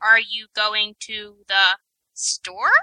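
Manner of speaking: level pitch, then a rise only on store. Describing question intonation in a voice, rise only on store. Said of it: "it gets the rising intonation for question mark, but it only does it on the last word of the sentence".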